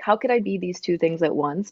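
ordinary delivery

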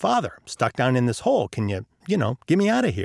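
ordinary talk

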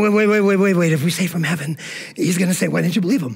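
put-on whispering voice. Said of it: "they're whispering".

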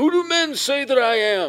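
wild, high screaming. Retelling a kid who followed you in the dining hall line, imitating someone screaming. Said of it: "he just starts screaming at me".

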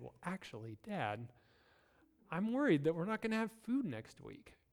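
small, hushed little voice. A father imagines his three-year-old son coming to him, in Kale's little high-pitched voice. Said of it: "he would come in his little voice".

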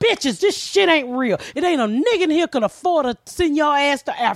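fed-up, angry scolding outburst, ranting. Retelling telling off a noisy movie theater crowd: imitating own angry outburst. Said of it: "I'm pissed off".

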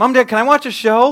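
put-on very loud, high, very cute little-girl voice. Parent retelling how their five-year-old interrupted them, imitating Ava's cute little voice. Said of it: "with her cute little voice".

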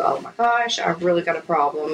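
ordinary talk

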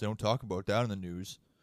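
put-on mumbling. Imitating him watching Fox News at home: imitating someone mumbling to himself. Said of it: "watching Fox News and mumbling to himself".

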